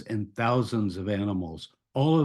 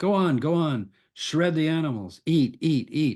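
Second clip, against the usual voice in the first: high-pitched, sarcastic delivery; 5 semitones higher than usual. Speaker retelling what Jeremiah said in the temple: mock-sarcastic urging. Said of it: "This is sarcasm".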